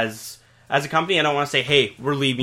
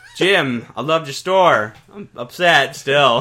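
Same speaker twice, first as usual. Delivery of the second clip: slow, loud, deliberate, drawn-out voice; 3 semitones higher, 6 dB louder than usual. Addressing a store owner who closed shop: Christopher Walken impression. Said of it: "Are you fucking Christopher Walken impression?".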